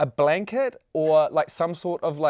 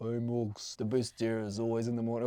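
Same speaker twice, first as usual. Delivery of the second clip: low, soft, burly gym-bro voice. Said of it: "I'll always send Morgs a video like".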